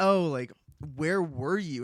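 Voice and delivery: a little distressed, mildly upset tone. Retelling how Aunt Em and Uncle Henry asked Dorothy: imitating someone upset.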